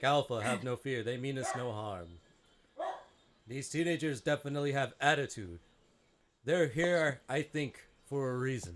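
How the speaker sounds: authoritative loudspeaker voice, calm, booming extra-deep bass. A wise, calm giant face addresses a worried companion, reassuring them that the newcomers mean no harm. Booming, deep, amplified, authoritative. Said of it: "and you see this giant blue clear energy tube with this ginormous just face, abstract face, / And then in a clear, almost like authoritative, booming voice, like if a loudspeaker had extra bass, / alm".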